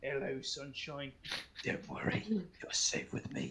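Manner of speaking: awkward, over-gentle, uncomfortably tender comforting voice. Voicing a character embracing a bloody fellow as punishment: awkward in-character comfort. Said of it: "really awkward with him".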